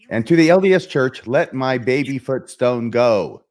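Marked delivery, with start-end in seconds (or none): 1.2-3.3 slow, drawn-out epic movie prophet delivery. On a call-in show, addressing the LDS Church in a Charlton Heston impression. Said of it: "That's my impression of Charlton Heston".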